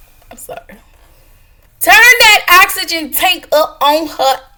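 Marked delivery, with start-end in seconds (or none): 1.8-4.4 shrill, blaring, very high, loud put-on voice. Retelling what she yelled, in her cousin Courtney voice. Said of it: "In my cousin Courtney voice".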